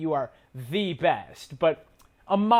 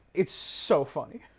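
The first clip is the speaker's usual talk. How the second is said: ordinary talk, nothing marked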